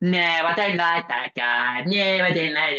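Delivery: put-on, slow, very effeminate voice. Imitating a man who dismisses guys the women meet: imitating an effeminate voice. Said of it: "He'll do it in a very effeminate voice".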